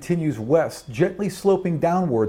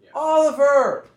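put-on very high, yelled little girl voice; 12 semitones higher, 4 dB louder than usual. In a told scene, a little girl is heard calling out, little girl yelling. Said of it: "you hear a little girl yelling".

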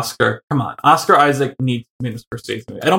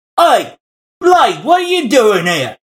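put-on English accent pitched a bit higher; 9 semitones higher than usual. Imitating Oscar greeting Blade in an English accent. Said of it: "That's not his accent at all".

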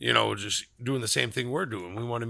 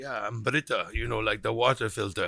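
put-on German accent of a woman. Retelling meeting a woman from Germany, imitating Britta's thick German accent. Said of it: "she had that thick German accent".

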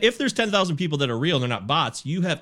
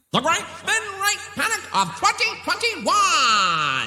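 put-on old-fashioned voice, much higher. Repeating a phrase the others could not make out, in an old-timey voice. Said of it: "I was trying to do it in an old-timey voice".

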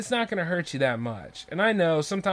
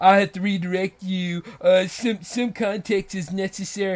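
puffed-up, egotistical, self-important star voice. Imitating a performer who redirects the host to a label: imitating an egotistical artist. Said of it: "When your ego comes out like that".

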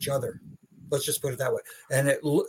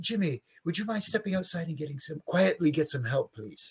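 put-on calm, polite voice, much quieter; 2 semitones higher, 5 dB quieter than usual. Quoting back how the other speaker asked Jimmy for help, imitating a calm request. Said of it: "it was so calm".

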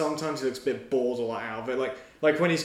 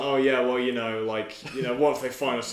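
ordinary talk

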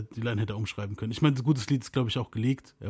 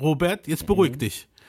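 calm, soothing teacher voice, high and raised; 5 semitones higher, 7 dB louder than usual. Retelling how someone calmed robert down: imitating someone like a teacher. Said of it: "wie so eine Lehrerin".

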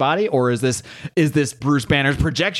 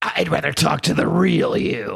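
rough, creaky monster voice, creature-like; 3 semitones higher than usual. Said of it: "This is how I envision this voice".

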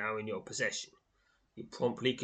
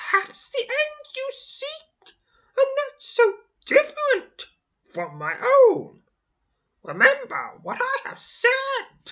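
shrill sorcerer hiss, very high and very loud; 12 dB louder than usual. Reading a story aloud, voicing the fading sorcerer: shrill hiss. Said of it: "his voice becoming a shrill hiss".

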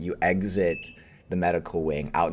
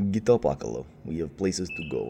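hushed, low-voiced, quiet delivery. As the Jedi Master waking you, Ugle's low quiet voice. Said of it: "he says in a very like low and quiet tone".

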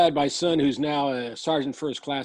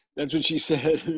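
usual speaking voice

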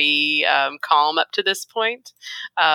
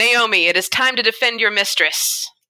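pitched-up, jerk-like, bossy tone; 6 semitones higher than usual. Ordering the pit fighter naomi into action: sounding like a jerk. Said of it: "you should probably sound like a jerk".

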